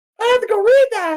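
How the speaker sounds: voice goes way up high and loud. Repeating the other speaker's words back: imitating in a Mickey Mouse voice. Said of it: "You sound like Mickey Mouse".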